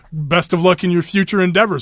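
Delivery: normal talking voice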